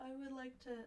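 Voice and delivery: spoken mid-yawn. Speaker starts to say something in the conversation while yawning. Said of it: "Sorry, I was yawning".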